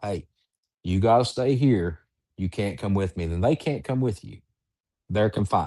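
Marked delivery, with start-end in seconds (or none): none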